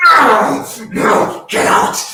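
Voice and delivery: very loud, shrill, high, drawn-out shriek. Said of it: "you just hear a screeching".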